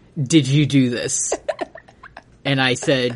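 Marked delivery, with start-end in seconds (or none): 0.2-1.3 mock venomous voice dripping with malice. Retelling what Kim asked that morning: imitating Kim's malicious voice. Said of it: "in a voice filled with malice".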